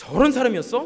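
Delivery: high, loud, scornful, condemning outburst. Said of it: "하고 비난하고 욕하기도 합니다".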